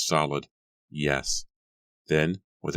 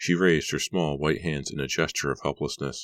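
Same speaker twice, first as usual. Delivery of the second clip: plain reading voice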